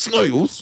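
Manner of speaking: very high, shrill, aggressive, combative voice. Imitating how he said the word snails: mock-aggressive 'snails'. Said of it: "the aggression in the word snails. It sounded like he was going to fight someone".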